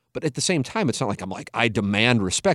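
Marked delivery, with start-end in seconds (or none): none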